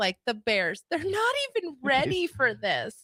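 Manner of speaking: very whiny, high, swooping, complaining voice. Mimicking someone's complaint to a co-host, in a mock-whiny voice. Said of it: "the whiniest voice".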